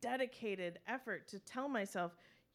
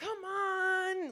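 very high, whiny, drawn-out voice; 9 semitones higher, 6 dB louder than usual. Recalling being told a movie was for grown-ups as a child: retelling a child's building tantrum. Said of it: "be gearing up for the complete temper tantrum".

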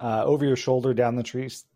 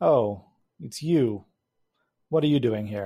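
flat, dry, expressionless, deadpan delivery. Narrator reads Stacy answering the door and looking at you, deadpan. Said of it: "kind of deadpan".

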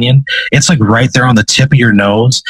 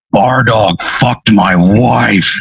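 furious demon voice, spitting with rage. Voicing a demon who turns redder and charges: furious demon, spitting with rage. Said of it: "spittle starts flying out of his mouth".

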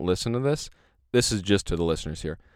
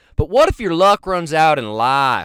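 very loud, high-pitched southern preacher voice; 7 semitones higher, 9 dB louder than usual. Speaker repeats their own line again, in a little preacher southern voice. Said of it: "Now I'm getting a little preacher southern".

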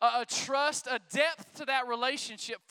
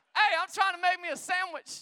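calling out, voice pitched up; 6 semitones higher than usual. Acting out going to someone's kitchen mid-conversation: shouting. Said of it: "I'm shout".

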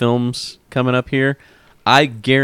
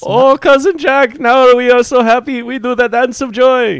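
very high, shrill, loud character voice; 14 semitones higher, 5 dB louder than usual. Joking about Balki joining the pirate film: Balki impression. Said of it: "that's a pretty decent impression".

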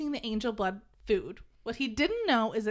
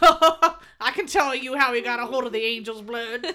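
very loud, sassy know-it-all tone; 8 dB louder than usual. Recapping the story, voicing Clary's unspoken thought: Clary's sassy inner voice. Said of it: "Clary's sassy inner voice is like".

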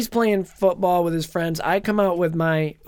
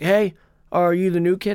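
put-on strangely nice bully voice. Retelling meeting a school bully on the first day: imitating an oddly nice bully. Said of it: "oddly, like, nice about it".

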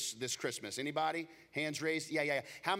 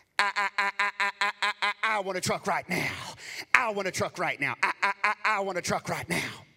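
put-on loud, repeated little girl voice; 4 semitones higher, 8 dB louder than usual. Recalling the first TV commercial seen in East Texas: Southern Chrysler Dodge Jeep ad girl voice. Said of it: "the commercial was a little girl's voice".

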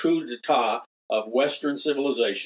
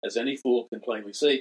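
normal talking voice

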